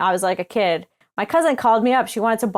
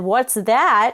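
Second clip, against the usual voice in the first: mock taunting, derisive tone. Retelling how the woman laughed at the written name: imitating a mocking tone. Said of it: "in this mocking tone".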